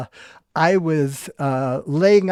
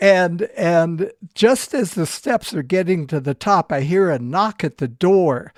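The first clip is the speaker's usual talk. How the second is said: ordinary talk, nothing marked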